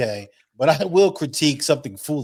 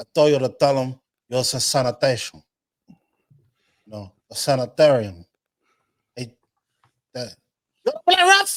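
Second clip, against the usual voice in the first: Cuban gangster accent, swinging up and down in pitch; 2 semitones higher, 4 dB louder than usual. Showing the other speaker how the character really sounds, in a Tony Montana impression. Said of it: "Tony sounds something like".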